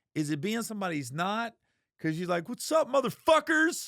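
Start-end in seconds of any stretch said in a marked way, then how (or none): 2.5-3.9 aggressive, very high-pitched, loud shout. Speaker imitates how the listener greets people, in a mock-aggressive greeting. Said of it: "you came out so aggressive".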